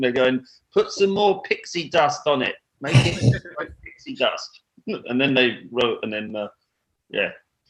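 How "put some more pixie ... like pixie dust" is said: put-on English accent. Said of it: "your impersonation of Spinal Tap being English".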